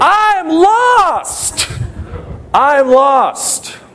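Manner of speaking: reenacted shout. Retelling being lost on a mountain at sixteen, retelling a shout. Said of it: "And I'm just shouting it".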